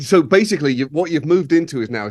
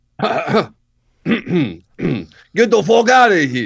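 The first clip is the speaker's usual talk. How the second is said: put-on Brooklyn accent; 3 semitones higher, 4 dB louder than usual. Asked whether their brooklyn accent has improved, the speaker shows it in a brooklyn accent. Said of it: "can you do it? Has it improved?".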